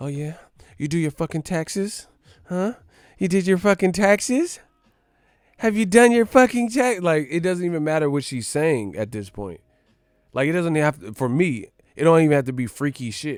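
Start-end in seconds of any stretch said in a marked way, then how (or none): 0.0-7.0 put-on high, sultry, seductive bedroom voice. Acting out a woman in the bedroom: imitating a woman's sexy voice. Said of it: "when they got that voice".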